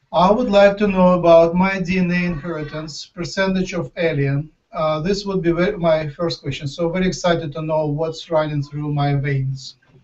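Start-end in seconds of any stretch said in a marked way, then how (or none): none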